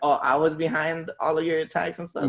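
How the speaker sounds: ordinary delivery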